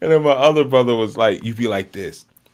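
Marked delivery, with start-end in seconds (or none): none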